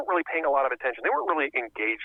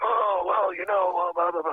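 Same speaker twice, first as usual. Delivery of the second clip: hoarse, pushed-out mob-boss style voice; 2 semitones higher than usual. Speaker who lost his voice mimics how he sounded in interviews: Don Corleone voice. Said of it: "I'm talking like, you know, Don Corleone".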